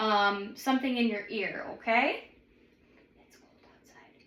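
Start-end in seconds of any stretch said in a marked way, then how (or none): 3.2-4.1 whispered, barely audible words. Testing hearing by whispering a phrase into the patient's ear: whispering. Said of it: "And I'm gonna whisper".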